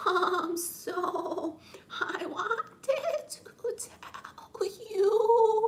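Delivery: halting stammer, very high, very slow. Doing a love confession bit: Stuttering Stanley voice. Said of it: "it's Stuttering Stanley".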